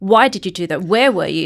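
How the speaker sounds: very loud, police-style interrogating tone. Contrasting police questioning with their own practice: demonstrating police interrogation tone. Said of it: "So their their tonality is different".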